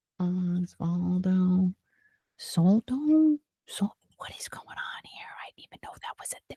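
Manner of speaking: very quiet, hushed, baffled whisper. Reacting with surprise to a lawsuit named in the text: whispering. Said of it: "Why am I whispering?".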